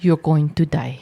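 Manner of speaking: put-on Filipino accent. Voicing disapproving parents after being asked to: Filipino accent. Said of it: "Say it in a Filipino accent".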